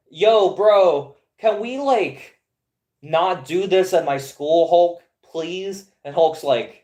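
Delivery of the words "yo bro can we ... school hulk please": casual, slow, drawn-out, begging, pleading tone. Retelling a comic scene, acting out Charles asking Hulk to stop: acting out Charles pleading. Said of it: "And Charles is like".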